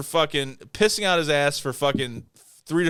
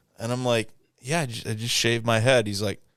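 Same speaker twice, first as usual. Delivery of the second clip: plain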